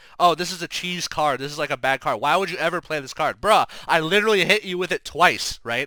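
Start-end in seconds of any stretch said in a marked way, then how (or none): none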